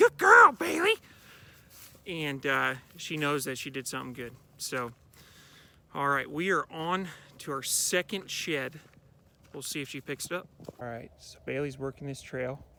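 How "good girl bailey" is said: very high, very loud, approving tone. Rewarding her dog Bailey for a good job, in a higher tone of voice. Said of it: "I use a, a higher tone of voice".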